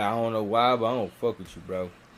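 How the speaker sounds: ordinary talk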